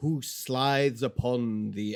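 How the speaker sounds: ordinary delivery, nothing marked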